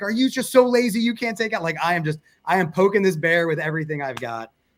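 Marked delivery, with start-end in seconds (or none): 0.0-1.6 mock furious shouted jab, pitched high. Retelling yelling at a twenty-one-year-old on the golf course, retelling a yell. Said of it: "I'm yelling".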